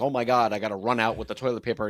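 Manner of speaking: imitated panicked, freaking-out voice. Retelling rushing from the bathroom to a crying child: imitating own past panic. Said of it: "you'd be freaking out".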